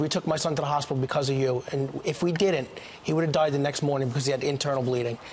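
normal talking voice

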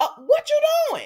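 high-pitched, loud yell.

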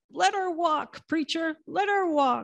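fervent cry. Retelling a sermon where a congregant yells back to the preacher, imitating a yell from the back. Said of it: "someone in the back yelled".

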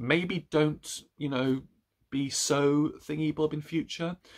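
high, play-acted, condescending, patronizing talking-down tone. Speaker retells a man's reply to a love letter, in a mock-patronizing tone. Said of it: "he then sort of very patronizingly says".

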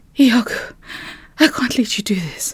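breathless, out of breath. Narrator reads a woman who ran to a man's house, out of breath. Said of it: "completely out of breath".

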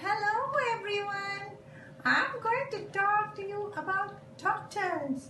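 very high little puppet helper voice. A puppet introducing a talk to everyone, in a puppet voice. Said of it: "A puppet is used to explain".

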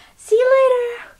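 silly, squeaky, very high and loud.

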